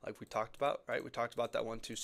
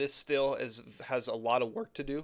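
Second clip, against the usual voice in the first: voice cracking, slower; 4 dB louder than usual. Explaining a chart to viewers, voice cracking. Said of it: "cracking my voice".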